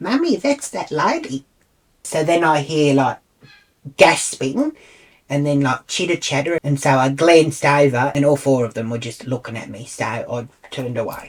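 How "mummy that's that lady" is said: put-on silly, childish, high little girl voice. Retelling a girl in line speaking to her mummy: little girl's voice. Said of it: "like little girl's voice".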